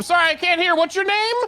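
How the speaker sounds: very high, loud, mocking taunting voice. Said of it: "holding my ear up, like, mockingly".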